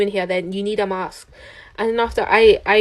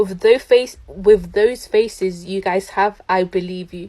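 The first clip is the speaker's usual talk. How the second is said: usual speaking voice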